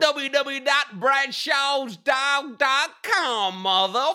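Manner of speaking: squeaky, very high, drawn-out put-on street dog voice. Asked to give the web address as the overseas street dog: overseas street dog voice. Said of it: "do you wanna give that address as the overseas street dog?".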